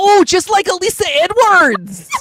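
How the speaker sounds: put-on heaviest Midwestern accent, very high, swooping. Retelling a story, the speaker quotes a man's wife in a thick Midwestern accent. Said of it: "in the thickest Midwestern accent I have ever heard in my life".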